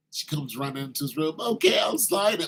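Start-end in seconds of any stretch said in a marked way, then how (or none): 1.4-2.5 crying, tearful, pitched-up voice. Retelling a bride agreeing to sign the prenup: imitating someone crying. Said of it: "while she's crying".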